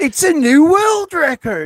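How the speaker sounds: slow, high, loud showman boast.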